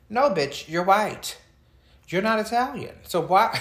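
high-pitched, loud, exasperated callout.

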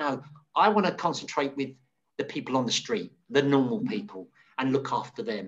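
ordinary talk

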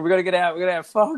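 mock high, frantic, panicked screaming. Retelling a boss's panic during an office fire drill: imitating Michael screaming. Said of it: "he's, like, screaming".

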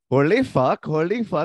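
put-on Indian accent. Trying again after being told his Indian accent was bad, in an Indian accent impression.

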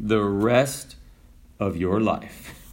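mock very low, soft, flat, dry deadpan. Retelling a parachute instructor's answer to a student's question, imitating a deadpan reply. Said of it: "He just deadpanned and he said".

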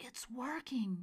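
words hissed out. [name], while a recording plays, hissing to Nora. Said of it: "[name] hissed".

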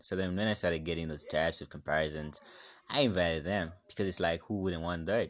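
ordinary talk

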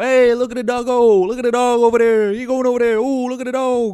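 shrill, booming, very loud, high, obnoxious hollering. Retelling pointing out dogs to their owners with friends, retelling an obnoxious yell. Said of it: "very obnoxiously just go".

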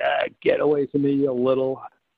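dismissive, shooing voice of a film character. Retelling meeting a movie actor on set: imitating Robert Shaw's movie voice. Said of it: "he sounded just like in the movie".

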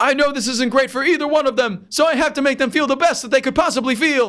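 very high-pitched, shrill scream. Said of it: "That's a very good impression".

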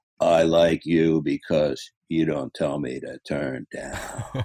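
unhurried low, slow, laconic drawl. Retelling what a laconic man said after their first couple of sessions, imitating his drawl. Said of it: "he said in his inimitable drawl".

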